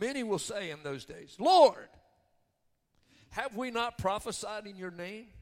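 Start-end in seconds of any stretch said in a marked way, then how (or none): 1.4-5.3 loud, high, belligerent voice. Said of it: "they're in essence being belligerent".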